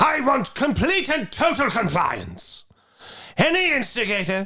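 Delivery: very high, whiny, drawn-out dictator voice. Cheating by using the lines he knows better, doing the V for Vendetta voice. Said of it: "That's pretty good".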